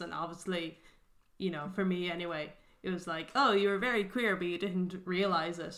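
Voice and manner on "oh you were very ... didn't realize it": ordinary delivery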